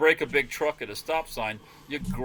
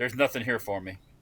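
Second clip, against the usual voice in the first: thoroughly disgusted, repulsed delivery; 5 semitones lower, 5 dB quieter than usual. Retelling what Hank said at a restaurant: imitating Hank sounding disgusted. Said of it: "you ever seen Hank when he's, he's disgusted?".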